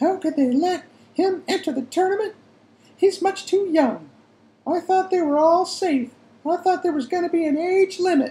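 very high, shrill, loud, anxious fretting mother voice. Telling about his mother's worry, he imitates his mother's anxious voice. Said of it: "Charlie imitated his mother's anxious voice".

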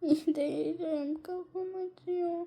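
very hushed, soft, high, tearful crying voice. After falling face-down onto a bag, a character says they're hurt, crying. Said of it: "Kanka dur ağlama gel".

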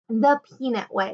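ordinary delivery, nothing marked

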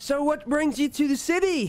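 very high-pitched, loud yelling. Storyteller quotes a tipsy woman's question in a crowd, mock-yelling over the crowd. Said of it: "She's kind of yelling over the crowd".

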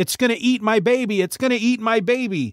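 high, mild, toned-down screaming cry. Telling a story about a monster, the speaker imitates a screaming woman. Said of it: "a woman starts screaming".

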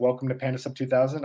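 ordinary talk

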